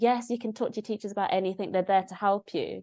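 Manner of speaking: ordinary talk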